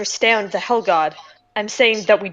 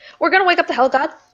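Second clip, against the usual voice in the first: blurted out in a hurry, rattled off, pitched up; 7 semitones higher than usual. Revealing to the group a plan another member suggested, said awfully fast. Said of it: "You said that awfully fast".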